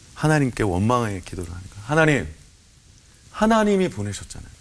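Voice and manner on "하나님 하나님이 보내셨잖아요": resentful, high-pitched, protesting tone. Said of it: "라고 따지고 들었어요".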